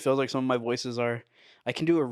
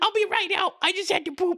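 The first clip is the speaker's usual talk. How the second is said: thin, rasping put-on voice, pitched very high; 3 dB louder than usual. Doing an impression of someone calling out from the toilet, high raspy voice impression. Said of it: "his voice is just really high and it's like raspy".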